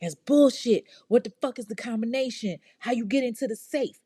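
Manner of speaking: mock angry, aggressive tone. Retelling Henry's reply to her denial: imitating angry demands. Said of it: "he's firing back".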